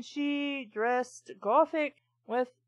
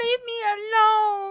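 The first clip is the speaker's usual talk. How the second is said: put-on high, loud scream, "alone" drawn out long; 9 semitones higher, 5 dB louder than usual. Reading a story aloud, a character fleeing to her bedroom: screaming. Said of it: "I screamed at her".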